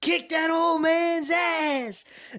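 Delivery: very high, very slow acted bellow, ass stretched. Retelling watching a match in a sports bar: imitating his own scream. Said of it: "I was screaming at the top of my lungs".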